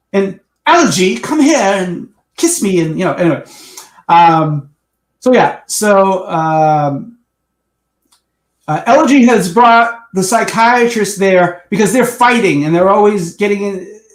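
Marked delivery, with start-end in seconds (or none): 0.1-2.8 smooth, affected voice. Describing an episode character who talks suavely: Squeaky's suave affected voice. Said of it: "he talks like this".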